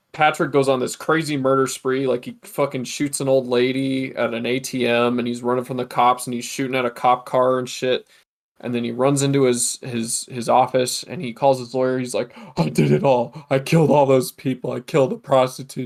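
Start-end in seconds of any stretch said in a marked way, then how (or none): 12.6-15.9 blubbering, whiny sobbing. Retelling a film scene where Patrick Bateman calls his lawyer: imitating Patrick Bateman whining and crying. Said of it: "whining and crying".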